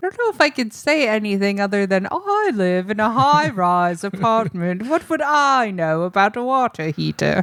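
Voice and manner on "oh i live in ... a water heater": affected high-society lady voice, slow and posh. Retelling a call center caller in the fancy lady voice. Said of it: "the fancy lady voice".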